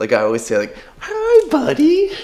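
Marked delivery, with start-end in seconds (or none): 1.0-2.1 very high, loud cooing voice. Speaker shows how they always greet their pet, in a high-pitched pet voice. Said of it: "speak to them in like a high pitched voice".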